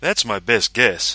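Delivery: self-satisfied. After the creature is named, another man answers, smug. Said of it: "said Rankin with a smug grin".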